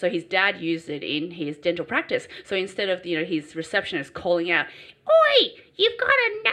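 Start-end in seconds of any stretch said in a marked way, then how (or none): 5.1-6.5 very high, loud, put-on bogan-style Australian accent. Imitating a dental receptionist calling out to the dentist; Australian accent. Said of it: "probably not in that Australian accent".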